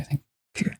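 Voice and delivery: unvoiced whisper.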